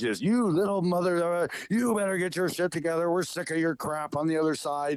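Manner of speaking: angry scolding tone. Retelling how a powerful big-brother figure chastised the speaker: mock angry scolding. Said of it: "he's really going off on me".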